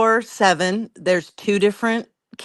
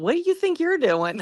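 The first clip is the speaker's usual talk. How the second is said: high-pitched, amused, incredulous voice. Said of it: "the parents look at 'em like".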